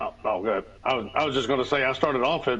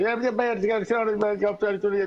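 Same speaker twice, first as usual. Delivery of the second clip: fast, pitched-up rambling, words tumbling together; 8 semitones higher than usual. Showing how a cartoon character talks: Boomhauer impression. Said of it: "Boomhauer's like".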